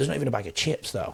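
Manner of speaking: high, put-on Australian accent. Quoting their son at dinner, imitating an Australian accent. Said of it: "That's how the Aussies talk".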